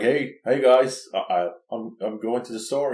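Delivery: put-on relaxed, casual dude voice. Describing the oldest vampire in a story, acting out his line: casual dude voice. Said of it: "He's just like a dude".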